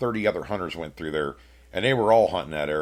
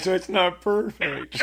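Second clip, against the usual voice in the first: very high-pitched, drawn-out whiny voice; 12 semitones higher than usual. Retelling his own outburst that made everybody laugh, in a mock-whiny voice. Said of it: "whiny voice".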